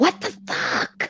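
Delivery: play-acted breathy, half-whispered angry exclamation. Retelling a reaction while listening in the shower: retelling a holler. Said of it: "and I hollered".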